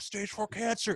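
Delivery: mock whispered scream, held back, man's scream. Retelling what a man at the bus stop screamed at marchers: imitating a man screaming. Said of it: "the guy's just screaming".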